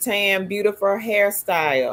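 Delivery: normal talking voice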